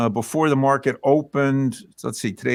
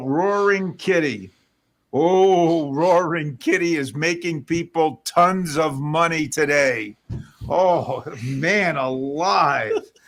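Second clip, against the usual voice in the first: play-acted heavy sarcasm, slow drawn-out oh; 3 semitones higher than usual. Talking about Roaring Kitty making people money: dripping sarcasm. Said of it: "you can hear the sarcasm dripping".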